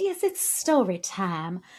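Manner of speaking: put-on Southern woman's accent. About to read to Amy from a book, in a Southern lady accent. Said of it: "I'm in Southern Lady or something all of a sudden".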